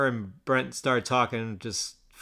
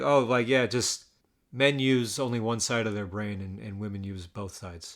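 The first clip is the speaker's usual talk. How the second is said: ordinary delivery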